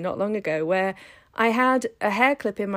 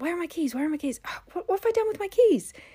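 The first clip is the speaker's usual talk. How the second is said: put-on very high, rapid, frantic panicked delivery; 9 semitones higher than usual. Retelling searching a bag for keys: imitating frantic searching. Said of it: "I start frantically searching for my keys".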